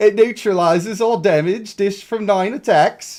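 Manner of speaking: put-on British accent, slipping, high and loud. Speaker tries not to sound insulting, reading a line in an attempted british accent. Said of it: "that got out of British really fast".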